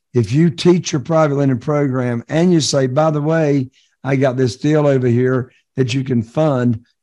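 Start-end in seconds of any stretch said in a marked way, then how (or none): none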